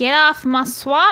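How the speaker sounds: put-on ogre character voice. Asked whether they can do Shrek, the speaker tries a Shrek voice. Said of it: "can you do Shrek?".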